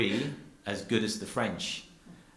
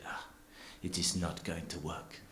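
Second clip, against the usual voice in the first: put-on French accent, much quieter; 3 semitones lower, 8 dB quieter than usual. Retelling what a man said about the speaker's Holstein cow, in an attempted French accent. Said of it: "I was going to try a French accent".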